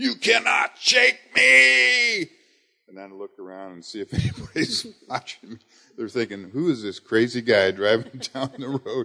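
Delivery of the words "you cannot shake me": very high, very slow, loud, rough scream. Speaker recounts shouting at the devil while driving down I-5, retelling screaming at top of lungs. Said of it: "I'm screaming at the top of my lungs".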